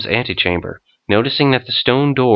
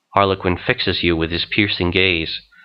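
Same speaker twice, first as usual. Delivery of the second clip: ordinary talk, nothing marked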